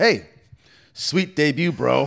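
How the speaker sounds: play-acted, high, drawn-out, super sarcastic tone. Retelling a hallway crossing with cameras following, act out the other person, imitating a super sarcastic greeting. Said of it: "both like super sarcastically".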